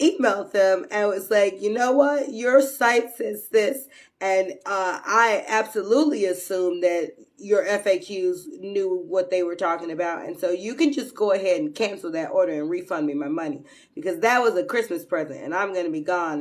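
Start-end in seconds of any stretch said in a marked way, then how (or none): none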